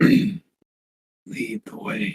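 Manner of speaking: low whisper, rough like raking gravel. A storyteller voicing a figure in a hallway, in a low, gravelly voice. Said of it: "low, gravelly voice".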